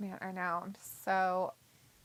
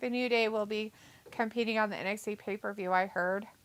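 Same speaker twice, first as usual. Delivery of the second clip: normal talking voice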